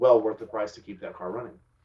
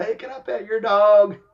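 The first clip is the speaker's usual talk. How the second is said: very high, drawn-out, loud scream; 11 semitones higher, 9 dB louder than usual. Retelling how a friend called out to a distant dog walker: imitating someone screaming. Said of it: "she screamed across the campground".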